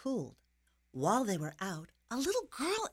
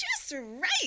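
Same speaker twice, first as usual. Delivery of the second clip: pitched-up, storybook-style exclaiming; 7 semitones higher, 3 dB louder than usual. Narrator reads the girl's line as she lies on the small bed: exclaiming. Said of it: "she exclaimed".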